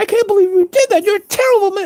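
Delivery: very high-pitched, shocked, scolding cry. Retelling the prosecuting attorney yelling at a father: imitating someone screaming. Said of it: "She's screaming at my father".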